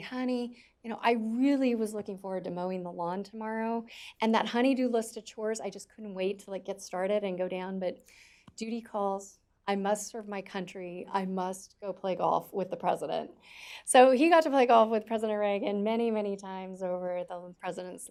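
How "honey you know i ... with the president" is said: ordinary talk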